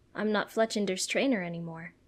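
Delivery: plain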